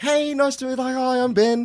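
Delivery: very high, mock bright, cheery, sunny tone. Retelling arriving at a new workplace and greeting people: imitating his own sunny greeting. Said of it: "all sunny".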